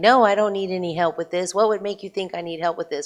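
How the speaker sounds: really angry, loud voice. Retelling a man's reply after you offered him help, imitating an angry man. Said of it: "he got really angry and he's like".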